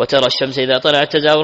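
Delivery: plain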